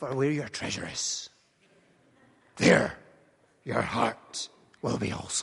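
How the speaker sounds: put-on piratey pirate accent. Quoting a saying to show it sounds piratey: piratey accent. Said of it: "if you use a piratey accent".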